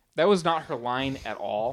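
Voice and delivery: ordinary delivery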